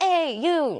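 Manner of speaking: distant high calling-out. Explaining catcalling to another speaker: imitating a catcall from afar. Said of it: "calling from far".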